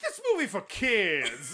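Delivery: high, slow, drawn-out sing-song woman's voice. Retelling a woman's remark behind them in the theater: imitating a woman's voice. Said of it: "trying to imitate her voice as best I remember it".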